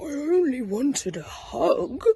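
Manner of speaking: put-on sniffling. After the owl answers crossly, the character replies, sniffing. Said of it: "sniffed Douglas".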